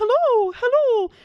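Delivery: very high, loud, yawny, hooting cartoon voice. Demonstrating how to lift the soft palate, in a Mickey Mouse voice. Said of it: "pretend to kind of like yawn or like talk like Mickey Mouse".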